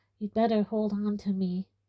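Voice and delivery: plain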